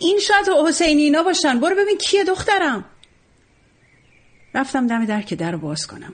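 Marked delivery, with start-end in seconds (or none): 0.0-2.8 mock loud high shouting, sounding distant as if indoors. Narrator voices her dad calling to his daughter from inside, shouting from inside the house. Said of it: "بابا از تو خونه داد زد".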